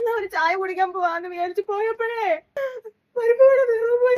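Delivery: high, sobbing, crying wail.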